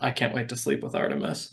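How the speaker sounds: soft, whispered mutter under the breath. Casting a spell to open a mansion, password said muttering under breath. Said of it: "I do mutter under my breath".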